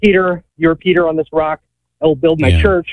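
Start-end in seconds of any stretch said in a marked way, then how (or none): none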